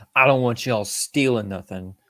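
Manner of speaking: usual speaking voice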